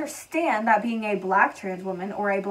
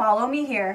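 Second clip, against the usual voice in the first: imitated, mock condescending tone. Retelling a line someone said in a video, imitating a condescending tone. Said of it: "certain things she says are just so condescending".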